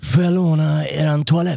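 put-on, mock half-slurred drunk voice. Night-shift 7-eleven worker retells a drunk young customer, imitating her half-slur. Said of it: "Tjejen halvsluddrar ur sig".

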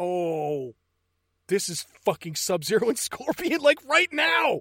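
high, loud amazed voice, building up.

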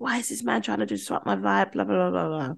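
mock drunk voice, fast, rough, rambling, ranting. Speaker retells their own drunken ranting on the way to the toilet: mock drunken rant. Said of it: "just ranting and raving in my drunk self".

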